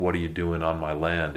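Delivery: ordinary delivery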